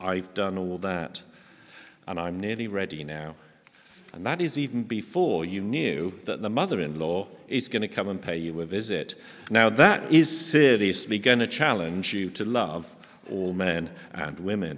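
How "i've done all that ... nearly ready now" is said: put-on smugness, lower and quieter. Imitating the person sitting next to you at Advent, mock-smug. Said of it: "smugly sitting next to you said".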